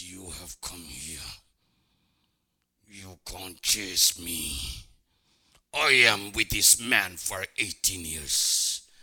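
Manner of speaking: very deep, low, menacing, threatening demonic voice. Recalling what demons said through people's eyes in church, totally different demon voice. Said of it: "totally different voice".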